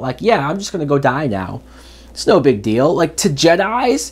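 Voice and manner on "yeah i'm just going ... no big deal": normal talking voice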